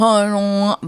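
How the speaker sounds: mimicked unclear, impaired speech. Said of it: "It's very much like".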